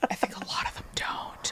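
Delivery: very soft, hushed, breathy whisper. On a podcast, answering a question about peers, whispering. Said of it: "I don't know why I'm whispering".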